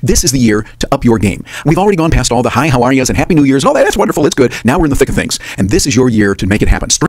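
very loud, sped-up, rushed delivery. Playing back their own MP3 recording for listeners: sped-up speech. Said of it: "You notice I am talking faster there".

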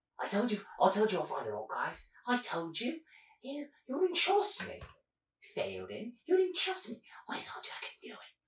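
nervous, jittery character voice. Game narrator voicing a skittish man pressed against a gruff man, skittish man's voice. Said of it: "A skittish man, literally scratching his neck, with long neck and very, very small face, with blonde, dirty blonde hair, but it's always so wet from the amount of sweat that comes out from this man".

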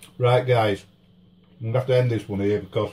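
talking while still chewing, mouth full of food. Wrapping up a food review video for viewers, talking while still chewing. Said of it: "still chewing".

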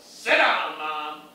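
loud, sassy, barked delivery.

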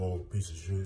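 mimicked muttering under breath. Telling about a rude man in a confrontation, imitating mumbling under breath. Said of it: "he's mumbling under his breath".

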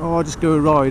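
ordinary talk, nothing marked

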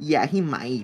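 acted, snippy, bitchy, sassy, catty tone. Imitating the other speaker's reply: imitating a sassy reply. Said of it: "Why did she make me sound so".

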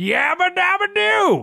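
shrill, very high, rough, swooping dying scream. Describing rats that scream when killed: imitating a rat's dying scream. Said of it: "final scream of".

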